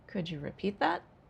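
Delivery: rising intonation with pitch rising at end. Showing learners a yes-no question: rising question intonation. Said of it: "yes, no question, rising".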